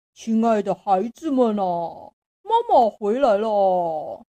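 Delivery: coarse, rough, loud wolf voice. A narrator voices the wolf at the door posing as the lambs' mother, rough wolf voice. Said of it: "你的声音粗粗的，一听就知道是大野狼".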